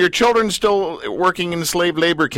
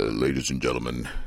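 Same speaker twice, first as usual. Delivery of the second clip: very low, deep, booming voice. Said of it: "Did you like my Darth Vader voice?".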